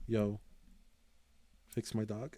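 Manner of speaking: freaked-out, slow, desperate pleading. Retelling carrying a bleeding dog into the vet: retelling own panicked plea. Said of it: "I was, like, freaking out".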